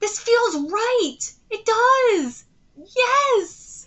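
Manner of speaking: high, loud, elated, happy cheering shouts.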